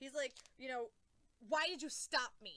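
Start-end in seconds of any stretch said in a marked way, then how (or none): 1.5-2.6 loud, drawn-out, furious scream. Retelling a scene where one character confronts another: imitating someone screaming. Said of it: "screaming at him".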